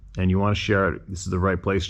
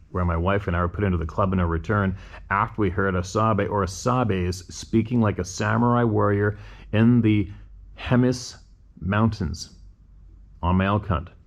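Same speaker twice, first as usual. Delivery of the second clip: plain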